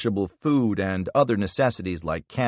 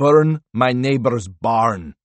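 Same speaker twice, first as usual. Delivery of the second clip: heavy, thick put-on Russian accent; 4 dB louder than usual. Harvath finishes a joke to the Hadids in a thick Russian accent. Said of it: "adopting a thick Russian accent".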